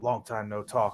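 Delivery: whispering. Greeting an old contact while sitting beside him: whisper. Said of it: "sort of in a whisper".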